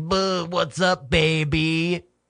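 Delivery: put-on very slow bro-y drawl, "baby" stretched out. Acting out a man hitting on a woman at a bar: imitating a bro-y guy. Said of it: "he's being all, like, bro-y".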